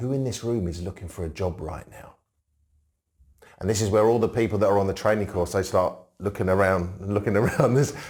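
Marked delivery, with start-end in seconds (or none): 0.0-2.1 low, hushed, conspiratorial, secretive voice. Showing how they ask a training group around the table, in a hushed, secretive voice. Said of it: "I'll drop my voice".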